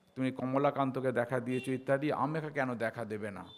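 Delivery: ordinary delivery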